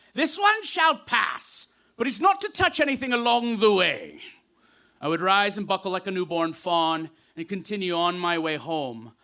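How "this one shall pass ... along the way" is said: put-on loud British accent. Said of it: "in a British dialect".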